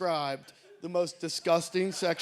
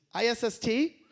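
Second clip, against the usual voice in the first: fake, put-on bad Indonesian accent, pitched up; 5 semitones higher than usual. Retelling a call about a flight, quoting the woman who answers: bad indonesian accent. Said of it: "forgive me for this bad Indonesian accent".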